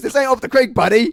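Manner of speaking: shrill, booming yell at full volume, very high. Retelling what a friend told a doorman, imitating George Wheeler. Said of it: "That's how he said it".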